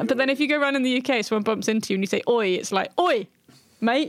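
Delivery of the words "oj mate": aggressive, confrontational, hostile-sounding. Showing how the exclamation sounds when said in the UK, aggressive. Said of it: "it sounds a lot more aggressive".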